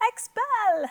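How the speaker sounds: very high squeak. Leading listeners in repeating a vocabulary word: really high voice. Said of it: "Say it really high".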